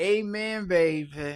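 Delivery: motherly voice, stretching the ending. Reading out what Mama said, imitating Mama. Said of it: "that's how I think Mama talk".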